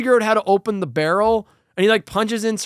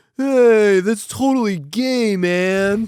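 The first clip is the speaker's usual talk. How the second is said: put-on very slow, spaced-out stoner drawl. Retelling what the two stoner guys in the scene say: imitating a stoner. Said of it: "the one guy's just like".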